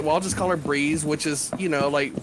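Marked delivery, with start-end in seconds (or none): none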